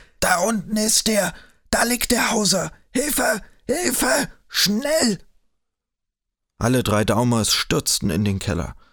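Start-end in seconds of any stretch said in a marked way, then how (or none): 0.2-5.2 piercing, very high, shrill, hoarse scream. The candidate shouts up from the cellar below, hoarse and shrill. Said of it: "Mit heiserer Stimme schrie er von unten nach Licht und fügte gellend hinzu".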